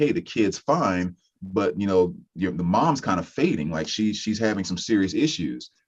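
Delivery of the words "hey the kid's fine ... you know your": plain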